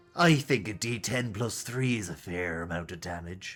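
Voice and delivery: put-on pirate voice, slow drawl. Deciding a damage amount for a dead sailor, in a piratey voice. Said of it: "Did a piratey voice there".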